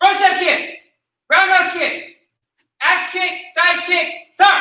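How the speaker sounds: loud, confident, high, barked delivery.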